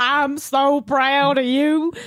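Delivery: put-on cowboy accent, very slow drawl. Doing a line in a cowboy voice. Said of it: "a cowboy voice".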